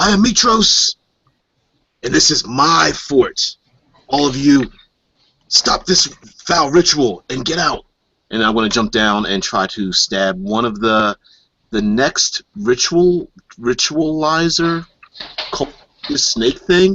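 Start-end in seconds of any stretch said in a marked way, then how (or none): 0.0-7.8 pirate character voice, pitched up. Confronting cultists at a ritual as a pirate character: in-character yell. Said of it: "yell out that".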